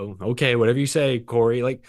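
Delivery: normal talking voice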